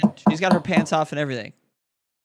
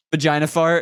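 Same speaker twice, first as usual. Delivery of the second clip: plain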